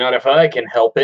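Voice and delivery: ordinary talk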